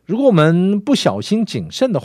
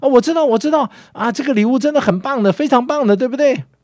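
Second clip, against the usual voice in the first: put-on high-pitched, excited, eager child voice blurting out. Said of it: "这个孩子马上抢着说".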